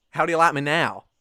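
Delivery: put-on southern American accent. Trying out american accents, the speaker attempts a southern one: southern american accent. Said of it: "I could try do a bit more southern".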